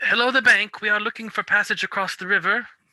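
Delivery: high, uncommanding call. Playing a character hailing people across a river: calling out across a river. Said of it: "kinda call out".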